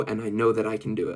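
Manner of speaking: normal talking voice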